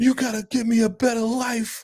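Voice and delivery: play-acted, very high-pitched sobbing. Retelling what she said to him at a restaurant, imitating someone crying. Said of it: "And then she's crying like".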